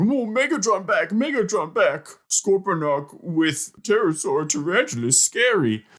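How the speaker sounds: high-pitched, broken caveman talk. Recapping an episode, the speaker quotes Scorponok; Scorponok caveman voice. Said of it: "speak like a caveman".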